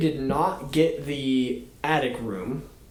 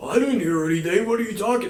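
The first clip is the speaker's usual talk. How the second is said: playful, fun put-on voice, pitched up; 6 semitones higher than usual. Retelling a ghost story, quoting a father woken at night: imitating dad in a fun voice. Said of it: "I don't know why I'm doing a fun voice".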